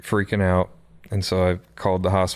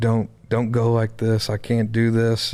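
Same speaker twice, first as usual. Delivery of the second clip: acted tearful words broken by sobs, crying out; 3 semitones higher than usual. Holding a woman who went limp and might be dying, retelling crying and screaming. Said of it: "screaming out. I'm crying".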